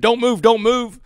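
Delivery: frantic, shrill, very high, barked scream. Retelling how an officer with a rifle shouted at him: imitating an officer screaming. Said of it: "he's screaming".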